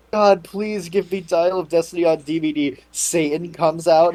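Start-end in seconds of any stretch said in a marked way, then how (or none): 0.1-2.7 acted, mock pleading tone, pitched lower. Acting out a hypothetical fan in a group bit, acting out a pleading prayer. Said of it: "pray to God. You're like".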